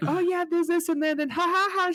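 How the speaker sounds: very high voice trailing off into nervous laughter. Retelling how the actress first found the voice: imitating Kitty's voice and nervous laugh. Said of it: "She does the voice".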